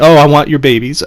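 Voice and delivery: ordinary talk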